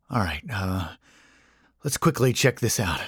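edgy, quick, rushed muttering, words hurried. Johnny turns to his companions after staring into the darkness; muttered softly. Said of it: "he muttered softly".

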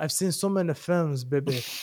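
wrestling ring promo voice. Plugging reviews, then switching into a Dusty Rhodes impression. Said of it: "that's actually a good impression".

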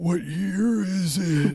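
put-on very high, very slow old man voice. Imagining coming out after living two lives: put-on old man voice. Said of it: "you have like an old man voice".

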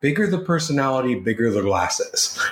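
normal talking voice

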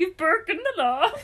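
comic chef gibberish voice. Laughing over a misspelling and how it sounds in their head, Swedish Chef voice. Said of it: "it sounds like the Swedish chef".

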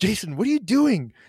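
very high-pitched, pissed-off, seething delivery. Recalling confronting jason at his laptop late at night: retelling a seething question. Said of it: "I didn't say it like that".

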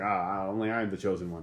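ordinary talk

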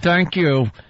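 furious, through clenched teeth. Retelling how a livid news anchor thanked the viewers: imitating a furious anchor through clenched teeth. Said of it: "clenching and she's going".

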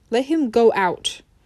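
ordinary delivery

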